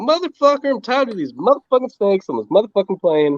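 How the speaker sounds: angry, spat out high. Trying to recall an actor's name, speaker quotes his movie line as a Samuel L. Jackson impression. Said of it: "he's like".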